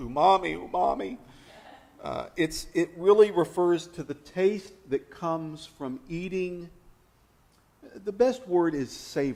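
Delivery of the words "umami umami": calling out while crying. Punning on a word while explaining tastes, mock crying out at night. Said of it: "when you're crying out at night".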